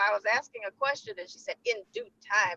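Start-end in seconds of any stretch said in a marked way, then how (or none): 1.7-2.6 mock firm, final, closing tone. Retelling a reply given to a question: imitating a firm voice. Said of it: "it was like a firm "in due time,"".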